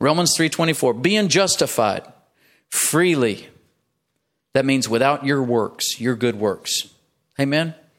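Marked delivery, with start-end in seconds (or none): 0.9-3.5 slow, deliberate reading, each word separate. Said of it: "I'm gonna read it slowly".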